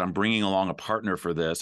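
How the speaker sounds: ordinary talk, nothing marked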